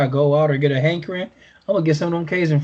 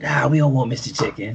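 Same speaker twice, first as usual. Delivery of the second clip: tough, put-on street-gangster delivery; 2 semitones lower than usual. Speaker recounts the family turning down mister chicken, voicing the kids: gangster voice for the kids. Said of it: "I like how gangster you make your kids sound".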